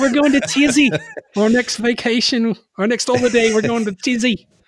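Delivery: silly put-on Australian accent, pitched way up. Quoting what he tells his wife, in a goofy Australian accent. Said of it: "doing that goofy accent".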